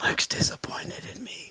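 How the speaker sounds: hushed, soft whisper. Playing a character being carried, whispering: whispering in character. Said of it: "I'm whispering while you're carrying me".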